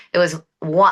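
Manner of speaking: usual speaking voice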